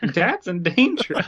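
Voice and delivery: put-on very high, squeaky cartoon-kid voice. Speaker voices Simba being horrified, in a Ralph Wiggum voice. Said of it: "Ralph Wiggum from The Simpsons".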